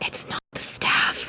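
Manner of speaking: whispering as quietly as possible. Whispering a hint to two others during a trivia question: whispering as quietly as possible. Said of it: "I whisper as quietly as I could".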